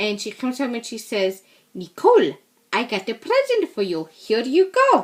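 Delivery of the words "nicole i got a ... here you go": put-on cute, sing-song Pennsylvania Dutch accent. Retelling a grandmother handing over a present: imitating a Pennsylvania Dutch accent. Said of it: "cutest Pennsylvania Dutch or Pennsylvania German accent".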